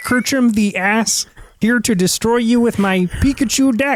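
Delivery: very high frog puppet character voice. Joking about getting into Pokemon, introducing himself to the other speaker: Kermit the Frog impression. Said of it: "Kermit the Frog impersonation".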